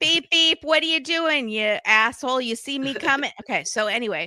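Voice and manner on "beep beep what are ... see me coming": put-on poor Long Island accent. Acting out a Long Island driver, in a bad Long Island accent. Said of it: "I'm doing such bad accents today".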